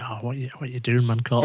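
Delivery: ordinary delivery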